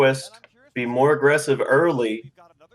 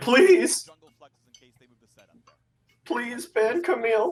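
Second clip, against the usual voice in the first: put-on crying, pleading, higher pitch; 9 semitones higher than usual. Retelling what Solo said while crying: imitating Solo crying. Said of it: "Solo was just crying, and he's like".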